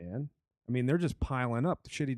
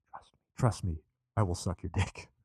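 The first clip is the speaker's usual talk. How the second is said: low, urging, confiding stage whisper; 5 semitones lower than usual. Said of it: "He's whispering".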